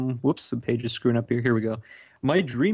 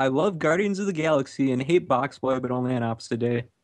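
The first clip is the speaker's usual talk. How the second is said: ordinary delivery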